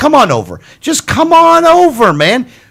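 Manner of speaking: imploring, begging tone, high pitch and drawn out. Asking GOP listeners to join the party: begging and pleading. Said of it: "I'm down to begging and pleading".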